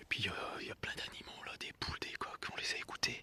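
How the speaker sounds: speaking softly. Describing an abandoned village and its animals in the morning, speaking softly. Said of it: "Je sais pas pourquoi je parle doucement".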